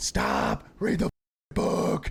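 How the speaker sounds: slow, drawn-out scream. Retelling what they screamed from the car, retelling a scream. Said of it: "So I'm screaming".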